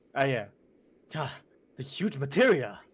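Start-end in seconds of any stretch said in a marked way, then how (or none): 1.2-2.7 mildly upset, not depressed. Voicing a line as directed by another person, Cloud, a little upset. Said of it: "just try to sound a little bit upset".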